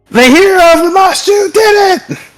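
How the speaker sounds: very high-pitched, triumphant goblin yell. Voicing a goblin who raises his kukri and cheers: goblin shouting in triumph. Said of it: "raises his kukri and shouts".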